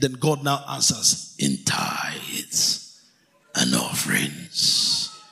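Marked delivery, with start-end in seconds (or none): 1.4-5.1 very low, deep, slow, rough voice. Reading God's answer from a Bible verse, in a Thanos voice. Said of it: "Do I sound like Thanos now?".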